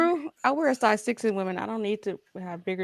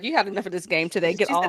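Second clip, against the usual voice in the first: mimicked scolding, telling-off tone. Imitating one of the girlfriends telling him to get off the game: imitating a girlfriend telling him off. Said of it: "One of the girlfriends like".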